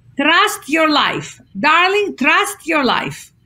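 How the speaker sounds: put-on Greek accent. Speaker quoting a woman's favorite saying, in a Greek accent. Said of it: "she would say with this fabulous Greek accent".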